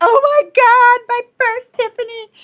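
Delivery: very high, loud, drawn-out tearful sobbing cry. Retelling opening a birthday gift from an aunt: imitating own past crying. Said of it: "I remember opening it and crying like".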